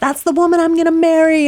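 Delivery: mock high yell. Retelling what the employment counselor yelled to the room: imitating someone yelling. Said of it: "And he yells".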